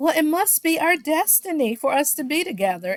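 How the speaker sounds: high, taunting, mocking tone. Retelling a cast member quoting another at dinner: imitating a mocking tone. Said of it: "mockingly said".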